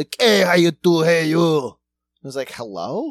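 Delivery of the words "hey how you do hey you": loud, badly done put-on Cuban accent. Imitating a phone caller from the local power company, Al Pacino Scarface voice. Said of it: "bad Cuban accent".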